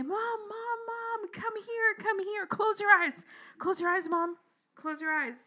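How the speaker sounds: very high, urgent, excited screaming. Retelling running to the gate to call Mom: imitating children screaming. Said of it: "to scream and say".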